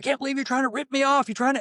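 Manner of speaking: very high, enraged, furious ranting yell. Retelling how the CEO went crazy on a worker: imitating someone yelling. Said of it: "Why are you yelling at him?".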